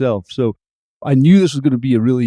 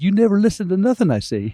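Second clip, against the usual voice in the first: mock high-pitched screaming; 8 semitones higher than usual. Retelling how a wife started a conversation: imitating wife screaming. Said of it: "screaming at me".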